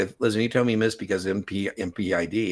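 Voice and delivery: plain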